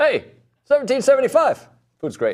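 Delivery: very high-pitched put-on commercial announcer voice. Joking after being told they sound like a commercial: mock commercial announcer voice. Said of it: "You sound like you're doing one of your commercials".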